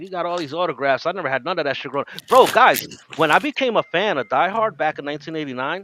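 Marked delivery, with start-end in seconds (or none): none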